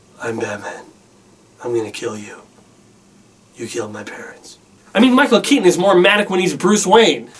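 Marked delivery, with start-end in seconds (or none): 0.2-4.6 very low, very soft and quiet understated delivery. Comparing live-action Batman voices, the speaker does Michael Keaton: understated Michael Keaton Batman. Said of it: "which is so understated".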